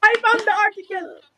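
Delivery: thrilled, excited, high-pitched screaming. Interrupting a conversation partner to announce something, screaming. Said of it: "sorry for screaming".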